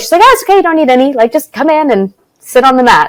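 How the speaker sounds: put-on thick Southern accent. Recalling a first yoga visit, quoting the woman who invited her in: thick Southern accent. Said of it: "with a thick Southern accent was like".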